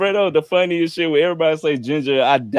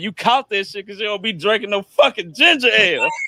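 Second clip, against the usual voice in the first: play-acted, blunt, angry old woman scolding voice; 4 semitones higher than usual. Retelling great grandma telling great great granddaddy why he got cancer: imitating great grandma's mad scolding. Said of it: "looked him dead in the eyes and was like".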